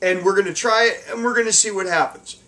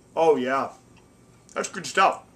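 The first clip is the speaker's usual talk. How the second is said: talking with mouth full, chewing, lower pitch; 5 semitones lower, 3 dB quieter than usual. Tasting the finished dish, talking with mouth full. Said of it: "I'm talking with my mouth full".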